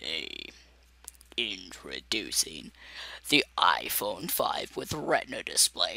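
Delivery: deep, very low voice, barely above a whisper. Showing how low their voice can go: really low voice. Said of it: "I could do my voice really low sometimes. It's like".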